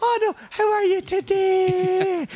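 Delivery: overdone Irish, very high, very slow, today stretched. Retelling how English people greet an Irish speaker, imitating an Irish accent. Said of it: "they tend to do my accent".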